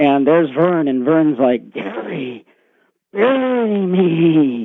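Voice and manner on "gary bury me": eerie, frightening, high-pitched voice, "me" drawn out. Retelling a man's nightmare, voicing a figure who speaks to him, really scary voice. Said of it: "In a really scary voice".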